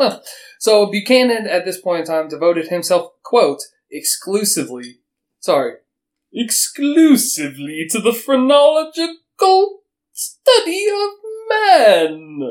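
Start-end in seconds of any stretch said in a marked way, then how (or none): 6.3-12.5 very high, very slow put-on voice, every word dragged. Reading out a quote from the physician Buchanan: Buchanan voice. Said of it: "That's my Buchanan voice".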